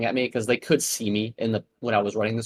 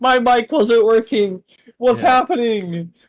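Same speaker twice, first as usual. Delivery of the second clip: mock scream, higher and louder; 12 semitones higher, 9 dB louder than usual. Retelling how a player screamed once his mic worked: imitating someone screaming. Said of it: "he was immediately screaming".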